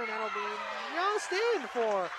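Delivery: hesitant, unsure, slow and drawn out.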